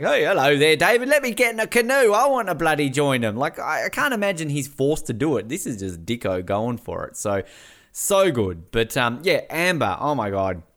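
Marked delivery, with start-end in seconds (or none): 0.0-3.4 eager, gung-ho voice, pitched up and raised. Imagining how the idea of joining the canoe came up: imitating Dicko. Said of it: "Here's Dicko on a fucking canoe going".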